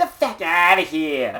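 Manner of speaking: New Jersey accent. Speaker demonstrates how people in New Jersey say it, New Jersey accent. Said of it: "So how do they say it in New Jersey?".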